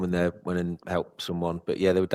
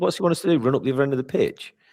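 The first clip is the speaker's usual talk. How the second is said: high-pitched, fast, mocking moan. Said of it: "He was moaning".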